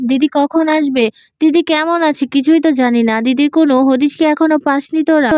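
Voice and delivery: ordinary delivery, nothing marked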